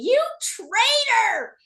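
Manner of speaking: mock, very high, swooping, jeering shriek. Retelling people in the rink screaming at them: imitating crowd screaming. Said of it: "screaming at me".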